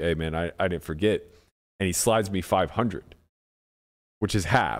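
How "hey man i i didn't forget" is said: very hushed, quiet, discreet aside. Retelling how Randy slid over money at the table: imitating Randy speaking very quietly. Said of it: "very quietly was just like".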